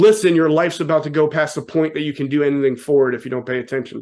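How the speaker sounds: normal talking voice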